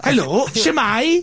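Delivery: put-on Welsh accent. Trying out a Welsh accent while another speaker coaches, in a Welsh accent. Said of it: "My Welsh accent".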